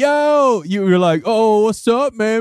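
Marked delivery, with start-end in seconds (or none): 1.2-2.4 very slow, drawn-out youth pastor voice. Quoting what the other host said in an earlier episode, youth pastor voice. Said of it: "And that was youth pastor voice".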